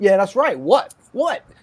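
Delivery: play-acted smug, cocky, brash, full-of-himself tone. Retelling his reply to a flight attendant on the plane: imitating Ruben sounding cocky. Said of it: "and he's cocky".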